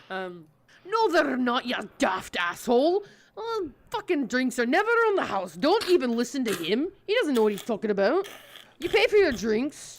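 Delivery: surly dwarf voice. Voicing a surly dwarf barkeep answering a bird creature: surly dwarf voice. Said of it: "surly as is his nature".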